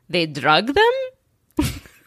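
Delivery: put-on, swooping Russian accent. Retelling a dad's reaction to a show, in his Russian accent. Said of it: "my dad in his Russian accent goes".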